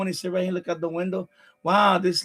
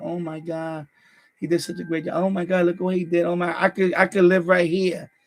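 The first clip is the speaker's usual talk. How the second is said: rapturous, effusive, gushing tone. Retelling how she praised the kitchen, imitating someone gushing. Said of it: "she started gushing about the kitchen".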